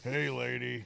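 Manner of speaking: put-on heavy chain-smoker voice. Retelling how a woman greeted the speaker on the phone, imitating a heavy smoker's voice. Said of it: "She sounds like she smokes 3 packs a day".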